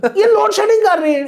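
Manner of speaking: very high, loud, exasperated ranting shout.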